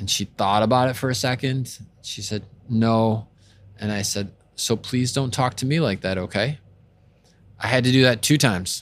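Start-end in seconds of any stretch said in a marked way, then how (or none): 4.8-6.6 put-on softest, calmest, gentle voice. Parent re-enacts what she said to her daughter, retelling her softest, calmest voice. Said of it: "in my softest, most calm voice possible".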